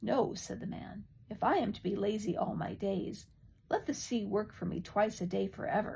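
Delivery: ordinary delivery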